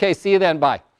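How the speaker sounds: put-on curt, brusque tone. Retelling a phone call from a wife, imitating wife's curt d voice. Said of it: "quintessential high D conversation".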